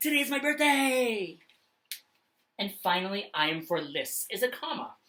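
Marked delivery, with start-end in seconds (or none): 0.0-1.4 loud, high, excited, with big feeling. Demonstrating an exclamation point, read the example sentence out loud with big feeling. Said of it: "say this out loud with big feeling".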